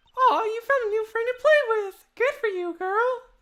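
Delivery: squeaky, very high-pitched put-on character voice. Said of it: "doing these high pitched voices".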